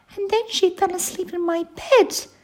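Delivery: very high, squeaky little bear voice. Reading a story, the baby bear adds what the visiting girl did, squeaking. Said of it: "squeaked Baby Bear".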